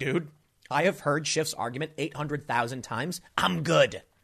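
normal talking voice

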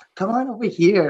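put-on talking like a teenage girl. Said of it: "start talking like she's, you know, like a teenager".

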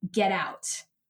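put-on stern, severe tone. Retelling what he said on arrival at his office: imitating a stern order. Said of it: "very sternly".

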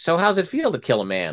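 teasing, half-serious acted tone. Retelling what an air traffic controller asked about the event, retelling a half-joking question. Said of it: "one of the guys says half jokingly".

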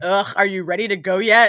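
loud, salty, resentful, annoyed voice. Describing a movie girlfriend stuck at her boyfriend's party, imitating a salty girlfriend. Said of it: "just salty that she has to be there".

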